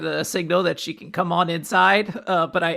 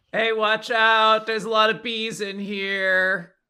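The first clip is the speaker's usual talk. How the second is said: urgent tone, with one part drawn out; 4 semitones higher than usual. Warning the party about bees in character: shouting a warning. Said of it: "going to shout with as much emotion".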